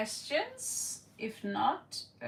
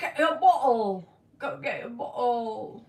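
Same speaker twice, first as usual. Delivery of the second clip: loud, put-on British accent; 8 dB louder than usual. Recalling living in Maidstone, the speaker imitates locals in a British accent. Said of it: "It's not that easy to speak British".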